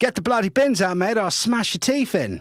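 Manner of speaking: very high, punchy, aggressive Australian woman's voice. Imitating an Australian woman asking someone to put the bins out: aggressive Australian woman impression. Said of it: "It was such a good impression".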